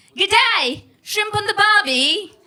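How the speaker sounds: very high, loud, slow, drawn-out Australian accent. Originally from india, sixteen years in australia, the comic tries an australian accent. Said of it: "the Australian accent doesn't suit my Indian head bobble".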